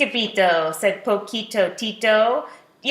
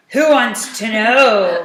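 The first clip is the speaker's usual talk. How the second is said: loud growl, last word drawn out; 5 dB louder than usual. Reading a story, a voice from inside the shack answers in a growling voice. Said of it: "Growled a voice from inside".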